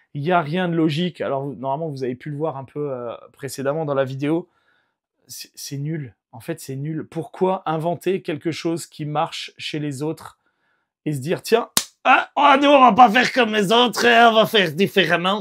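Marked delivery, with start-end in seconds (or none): 11.4-15.4 poorly done, put-on Belgian accent, loud and high. Voicing an imagined decision-maker's thoughts, in a bad Belgian accent. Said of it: "j'ai fait très mal l'accent belge".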